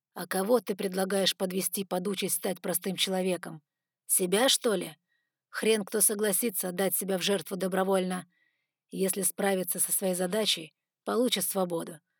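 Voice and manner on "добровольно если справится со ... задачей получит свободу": ordinary delivery, nothing marked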